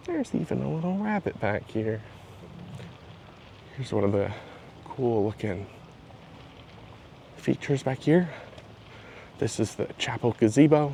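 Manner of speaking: soft, hushed, breathy near-whisper. Showing the chapel gazebo alone in the gardens, talking quietly. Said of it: "I don't know why I'm talking so quiet".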